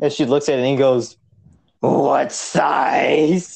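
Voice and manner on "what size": rough, creaky, croaking lifelong smoker's voice. Retelling a woman's reply when asked for a shirt, imitating a heavy smoker's voice. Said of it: "that voice right there".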